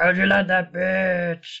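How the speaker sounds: sweet, beautiful puppet-style voice. Describing a film scene where a puppet whacks a woman, in Fuzzy Bear Muppet voice. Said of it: "this beautiful Muppet's voice goes".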